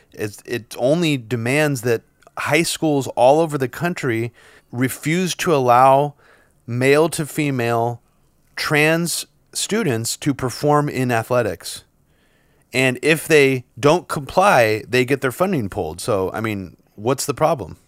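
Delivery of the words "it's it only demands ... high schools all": plain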